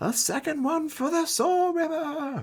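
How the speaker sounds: very high-pitched shriek. Voicing a character who was just stabbed in the back: screaming. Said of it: "Mark is just screaming".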